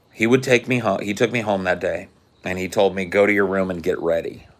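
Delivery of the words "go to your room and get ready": put-on calm, even, controlled, measured way of speaking. Retelling what a father told him: imitating a calm, measured voice. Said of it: "in a very calm and measured voice".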